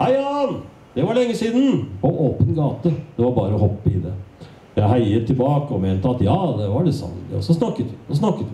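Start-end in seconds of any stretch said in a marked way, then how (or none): 0.0-1.9 very high-pitched shout, called out loudly. Narrator recounts an old acquaintance hailing the narrator on the open street, calling out.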